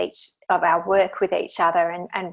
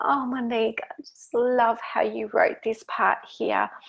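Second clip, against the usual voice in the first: mock tear-filled, near-sobbing, sobby voice; 4 semitones higher than usual. Retelling how a woman praised the speaker's chapters, imitating a sobby voice. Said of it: "she just had this kind of sobby voice".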